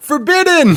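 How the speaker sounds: high, far-carrying yell. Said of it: "someone yells out".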